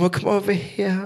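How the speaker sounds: put-on comforting, endearing Brummie Birmingham accent. Praising the Birmingham accent, speaker acts out a local calling them over: Birmingham accent. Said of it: "They go".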